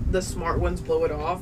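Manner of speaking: ordinary delivery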